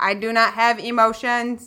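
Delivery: robotic voice. Speaker imitates a woman who used to talk like a robot: robot voice. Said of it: "she talked like a robot".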